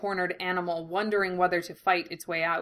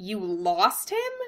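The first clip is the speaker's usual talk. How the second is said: incredulous, disbelieving tone. [name] reacts to Russell saying he lost him, asking incredulously. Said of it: "[name] asked incredulously".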